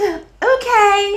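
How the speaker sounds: put-on sarcastic okay. Retelling how she answers, imitating Trisha's sarcastic okay. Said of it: "it's sarcastic".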